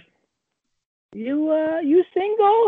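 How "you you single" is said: put-on high, slow crazy old lady voice. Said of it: "And then I was like".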